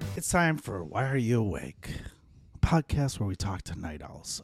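smooth late-night radio announcer voice. Hosting a podcast intro, you announce the show and its theme to listeners in a put-on broadcaster manner. Night owl radio voice. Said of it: "Was that your night owl voice or your radio voice".

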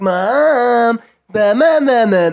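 very slow, high, loud tattletale voice, word stretched. Asking how siblings told on each other, imitating a tattletale voice. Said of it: "a certain voice it was always done in".

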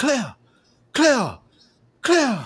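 very high, swooping put-on anime Japanese accent. Describing anime characters calling out his wife's name, in a mock Japanese anime accent. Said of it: "characters in their Japanese accents going like".

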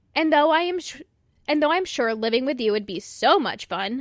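heavy, pointed sarcasm, tongue in cheek. Speaking directly to a parent, sarcastic. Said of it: "peep the sarcasm".

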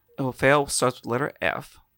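ordinary talk

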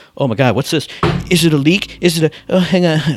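show host voice, caught off guard. Imagining a phone call during the award show: imitating Geoff Keighley. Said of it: "He'll go".

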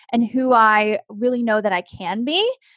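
ordinary delivery

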